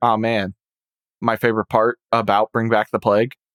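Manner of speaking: usual speaking voice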